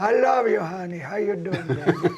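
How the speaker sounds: put-on high, loud grandma-style calling voice. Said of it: "My father's mother talked like this".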